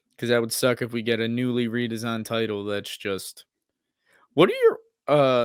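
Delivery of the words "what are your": loud cracking voice break mid-phrase. Asking a question while chatting, with a voice crack. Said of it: "that was a bad fucking voice crack".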